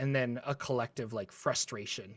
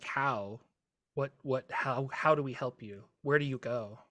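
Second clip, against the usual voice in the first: pleading, begging voice. Voicing a figure who asks the players how to help: pleading voice. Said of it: "a pleading".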